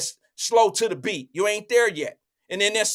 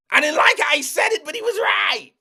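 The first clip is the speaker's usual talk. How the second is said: high, grudging shouting; 7 semitones higher, 4 dB louder than usual. Doing an impression of Emmanuel admitting the speaker was right: impression of Emmanuel. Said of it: "I did my best impression of Emmanuel".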